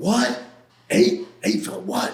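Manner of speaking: acted incredulous half-finished cry, shocked and disbelieving. Retelling the moment a lawyer named the charges: imitating his own past screaming. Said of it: "I'm, like, screaming".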